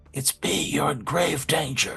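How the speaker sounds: soft, hushed half-whisper, barely any voice. Narrating a campsite scene, voicing a character who half-whispers to a sleeper; half-whispering. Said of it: "he whispers".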